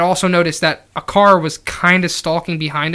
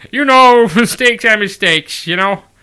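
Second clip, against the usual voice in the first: put-on dopey folksy Wisconsin drawl; 2 semitones higher than usual. Like a laid-back small-town cop shrugging off a huge mistake, speaking in a folksy, nasal Midwestern drawl as if it's no big deal. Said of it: "I just want to do Wisconsin".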